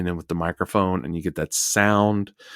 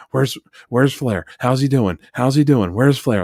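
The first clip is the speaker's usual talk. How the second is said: raised, high-pitched, nervous fretting; 5 semitones higher, 6 dB louder than usual. Retelling commentary through the match, imitating Bobby Heenan as a nervous dad. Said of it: "he's like a nervous dad".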